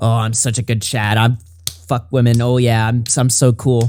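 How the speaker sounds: mocking imitation of boastful bragging. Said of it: "at the start, he's like".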